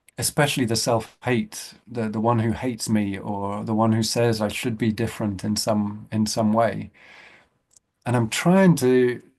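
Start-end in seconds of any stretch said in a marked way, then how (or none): 8.1-9.2 trying stressed and drawn out slowly. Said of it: "I emphasize the word trying".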